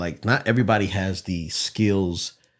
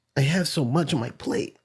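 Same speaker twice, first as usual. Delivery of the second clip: upset put-on voice, higher pitch; 8 semitones higher than usual. Retelling an argument, quoting the partner's cursing words: imitating partner's voice, upset. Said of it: "try to do my voice".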